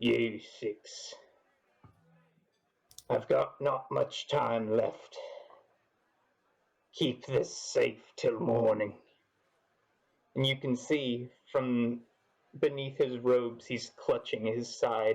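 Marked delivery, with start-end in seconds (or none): 0.0-8.9 gruff voice of a stranger. Narrating a tavern scene, a stumbling stranger addresses the six heroes in a gruff voice. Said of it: "He speaks in a gruff voice".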